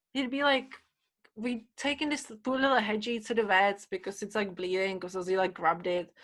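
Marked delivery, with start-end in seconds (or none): none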